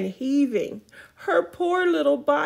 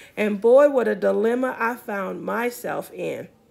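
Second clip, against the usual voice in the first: ordinary delivery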